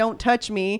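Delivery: put-on upset, protesting cry, screamed. Retelling how someone screamed while being bathed: imitating Penny screaming.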